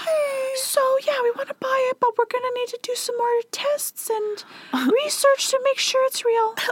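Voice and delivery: very high tiny voice, faking composure. Retelling a buyer who sees the seal and tries to stay calm, imitating a really high voice. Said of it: "talks in a really high voice".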